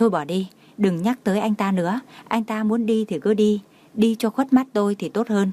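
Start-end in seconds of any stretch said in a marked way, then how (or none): none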